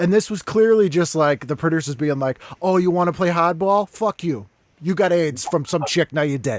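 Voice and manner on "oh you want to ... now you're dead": put-on Boston accent. Retelling what the producers were thinking: imitating producers in a Boston accent. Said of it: "the Boston accent is warranted there".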